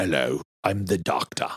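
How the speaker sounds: slow, drawn-out, slightly piratey star voice. Doing an impersonation of an actor introducing himself as the Doctor: Idris Elba impression. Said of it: "I did my Idris Elba impersonation".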